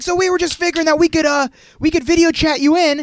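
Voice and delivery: put-on very high, over-loud old-person shouting. Retelling a video chat scene, imitating Rufus yelling at the screen. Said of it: "the old person thing where he's screaming at the screen".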